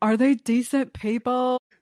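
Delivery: stretched-vowel Southern drawl. Quoting a favorite line a woman keeps saying, imitating drawn-out vowels. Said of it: "the way she draws out all the vowels".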